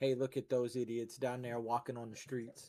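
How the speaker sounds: hushed, half-whispered stage whisper. In character, speaking aside to another character, half-whispering. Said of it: "I whisper to Gwen".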